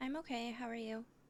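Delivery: soft, barely audible half-whisper. Answering a greeting so softly the other person can barely hear; half-whispering. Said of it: "I can barely hear you".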